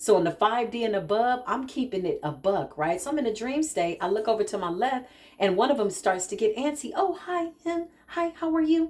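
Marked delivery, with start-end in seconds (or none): 7.0-8.9 sweet, delicate, gentle, high voice. Retelling a dream in which someone greets the speaker, imitating a soft voice. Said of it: "She's real soft".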